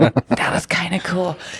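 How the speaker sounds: laughing aside.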